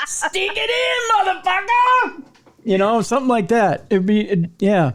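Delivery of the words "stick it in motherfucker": very high, slow, deliberate delivery. Imagining a sex toy voiced by Samuel L. Jackson: Samuel L. Jackson impression. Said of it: "Do you think you could have Samuel L".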